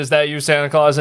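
ordinary talk

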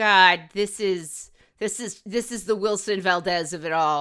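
ordinary delivery

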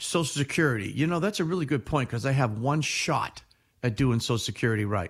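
normal talking voice

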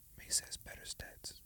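very quiet, breathy, barely voiced whisper. Comparing two artists' chart stats with another speaker: whispering. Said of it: "I had to whisper that".

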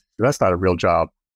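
ordinary delivery

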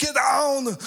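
high-pitched, loud barking voice. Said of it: "my Arnold Schwarzenegger commands".

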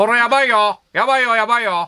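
put-on frantic, high, panicky comedian voice. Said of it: "ちょっと出川さんみたいになってるけど".

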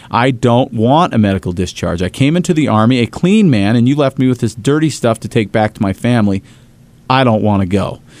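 ordinary delivery

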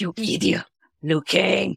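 put-on shrill cartoon chihuahua voice. Showing how a Christopher Lambert impersonation turns out: Christopher Lambert impersonation like Ren Hoek. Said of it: "impersonation of Christopher Lambert, I just try to sound like Ren Hoek".

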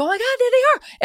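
play-acted, thrilled, very high-pitched excited cry. Retelling spotting grizzly cubs from the van: imitating an excited exclamation. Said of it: "Everyone was so excited".

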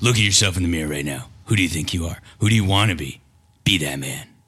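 superhero voice in broadcast style. Addressing the listener directly, the speaker talks in a Batman voice. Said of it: "Where'd that voice come from? ... his Batman voice".

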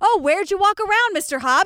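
high-pitched intimidating police voice. Retelling how a suspect was questioned, doing an impression of the cop. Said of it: "doing an impression of the cop".

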